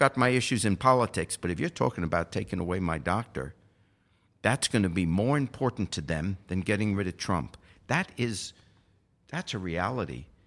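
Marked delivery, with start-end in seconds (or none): none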